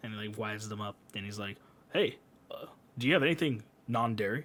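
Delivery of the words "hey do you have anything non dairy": mock very formal American voice. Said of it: "in the whitest way possible, like, in the most formal".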